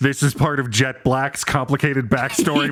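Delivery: ordinary talk, nothing marked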